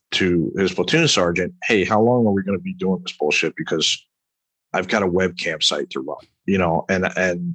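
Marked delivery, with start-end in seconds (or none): none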